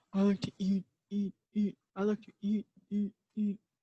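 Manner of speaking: deep voice. Narrator reads Johnny's line as he trots to the table, deep voice. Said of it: "In a deep voice".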